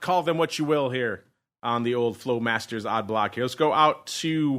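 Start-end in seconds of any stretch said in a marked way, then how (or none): none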